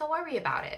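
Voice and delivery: bad put-on New York accent. Retelling what their guides tell them: put-on new york accent. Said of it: "That's my New York accent, but it's like not very good".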